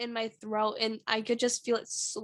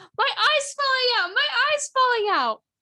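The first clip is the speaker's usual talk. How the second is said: put-on shrill, very high, very loud little-kid yelling; 14 semitones higher, 9 dB louder than usual. Retelling a preschool memory of suddenly yelling: imitating a child yelling. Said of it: "I started yelling".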